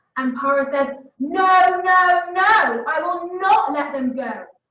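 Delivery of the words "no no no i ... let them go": mock, very slow, raised, loud furious angry shout. Retelling how someone plays Pharaoh, the speaker gives his reply mock-angry and loud. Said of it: "in a really angry voice and a really loud voice".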